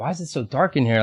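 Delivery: ordinary talk, nothing marked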